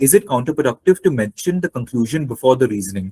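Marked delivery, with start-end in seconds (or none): none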